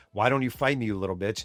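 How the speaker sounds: put-on whisper. Retelling a boxer's taunt to his opponent in a clinch: imitating a whisper. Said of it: "would whisper into his ear".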